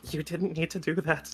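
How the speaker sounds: hushed, whispered voice. Voicing a panicked character leaning in real close: whispering. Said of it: "he eventually whispers".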